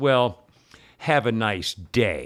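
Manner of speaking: put-on snotty, slow, dismissive voice. Retelling a clerk's parting words: imitating a snotty clerk. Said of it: "One of those snotty ones".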